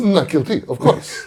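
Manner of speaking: English in loud, high, put-on French accent. Answering how to say not guilty in French: fake French accent. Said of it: "say English words with a French accent".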